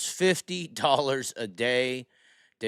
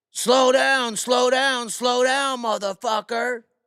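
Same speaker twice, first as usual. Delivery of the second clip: shrill, taunting, mocking shout, very high, loud; 11 semitones higher, 5 dB louder than usual. Retelling a man shouting at a police officer: retelling a yell. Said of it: "He just just yelling at him".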